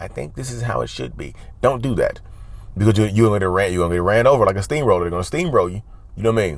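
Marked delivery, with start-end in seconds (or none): 0.0-1.3 soft, tentative, unsure hedging tone. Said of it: "as opposed to".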